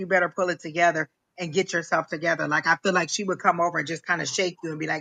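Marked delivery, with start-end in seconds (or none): none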